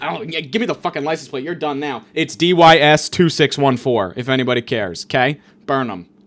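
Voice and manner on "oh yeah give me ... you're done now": mock angry, fed-up, pissed-off tone. Retelling a confrontation while chasing someone; retelling a pissed-off retort. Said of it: "I'm like pissed off".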